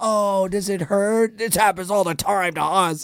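mock jeering, slow, through laughter. Retelling how onlookers laughed at the speaker; retelling a mocking, laughing taunt. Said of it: "they're laughing at me like".

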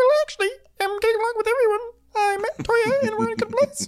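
very high, squeaky voice. Retelling what a woman said about how she gets along with people, in a Beaker voice. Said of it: "puts on her Beaker voice".

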